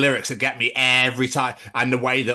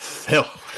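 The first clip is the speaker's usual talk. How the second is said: mock strained, struggling delivery of "filth"; 3 semitones higher than usual. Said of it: "you struggle to say filth".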